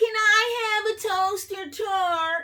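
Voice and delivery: very high, drawn-out whiny voice. Issy asks a question, in a whiny voice. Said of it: "Issy asks in a whiny voice".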